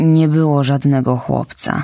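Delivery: resigned, said with resignation. Asked by a startled woman where the boy is, a man replies with resignation. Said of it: "Odparł z rezygnacją Mateusz".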